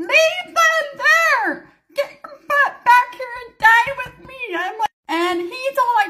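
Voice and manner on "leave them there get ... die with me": loud, high-pitched screaming. Telling the audience how she yelled at her husband, retelling a scream. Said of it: "I'm screaming at him".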